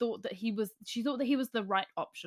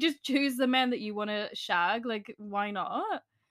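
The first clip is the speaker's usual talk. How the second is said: normal talking voice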